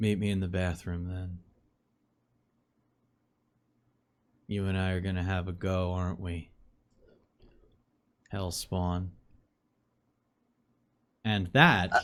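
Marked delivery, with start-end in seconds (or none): 0.0-9.1 very soft, close half-whisper. Voicing a character leaning in to a player: half-whispering in character. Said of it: "And he whispers in your ear".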